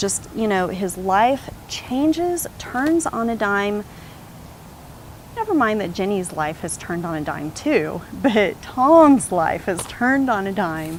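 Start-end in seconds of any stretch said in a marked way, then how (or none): 8.1-11.0 dry, mildly sarcastic, slightly raised voice. Speaker talking about Tom's and Jenny's lives, somewhat sarcastic. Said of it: "(*said somewhat sarcastically)".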